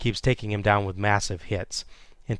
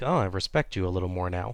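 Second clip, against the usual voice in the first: usual speaking voice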